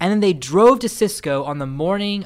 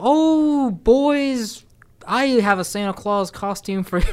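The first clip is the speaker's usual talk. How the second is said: man doing a high, put-on woman's voice; 6 semitones higher than usual. Speaker mimics how he tried to sound like a woman, imitating a man's woman voice. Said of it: "that's him trying to be a woman".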